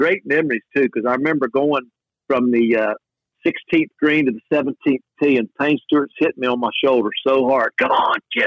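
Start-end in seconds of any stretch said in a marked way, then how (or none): 7.8-8.5 mock keen, pumped-up, fired-up tone. Retelling a teammate cheering on the walk to the tee: imitating Payne Stewart yelling. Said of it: "he's yelling at me".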